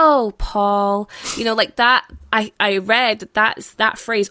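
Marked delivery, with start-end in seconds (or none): 0.0-1.1 mock syrupy, saccharine, sickly sweet voice. Imitate how a woman in the film presents herself to paul, in a put-on sickly sweet voice. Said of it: "this sickly sweet voice".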